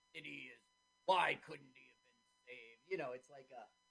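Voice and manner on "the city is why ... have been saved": lower movie voiceover announcer voice. Retelling a movie scene's narration: voiceover announcer voice. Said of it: "this voiceover announcer".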